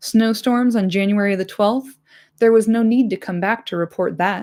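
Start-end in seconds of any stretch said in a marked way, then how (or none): none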